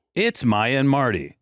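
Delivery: grand, very slow show-intro announcer voice. Doing the show's intro announcement in a big booming announcer voice. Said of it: "I was the voice of the intro".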